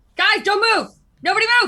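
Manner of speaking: very loud, shrill, high-pitched yell. In a tabletop game, a player's character warns the group, yelling. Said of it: "I yell".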